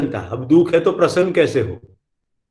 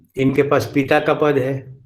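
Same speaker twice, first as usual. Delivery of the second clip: usual speaking voice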